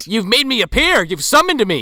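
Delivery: very high, loud, swooping put-on Irish accent drifting Scottish. A summoned Irishman appearing after a revenge killing is activated, Irish accent drifting Scottish. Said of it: "I actually am not that bad at an Irish accent".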